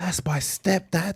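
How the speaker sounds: secretive, hushed stage half-whisper. Joking about what the crying boy might say: acted half-whisper as the boy. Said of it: "He whispers".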